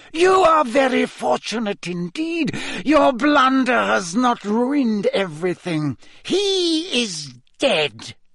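cold, icy, very high-pitched voice. Narrator reads a voice from the chair speaking to the man on the floor; cold, high-pitched voice. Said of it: "said a cold, high-pitched voice".

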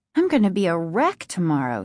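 ordinary delivery

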